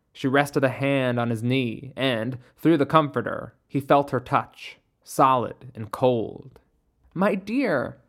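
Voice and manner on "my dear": soft, gentle, hushed, slightly high. Mother Midnight, hand on Caleb's knee, speaks to him: soft, smiling. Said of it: "she said softly".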